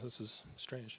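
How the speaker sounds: choked up with emotion. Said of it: "I don't know why I'm emotional".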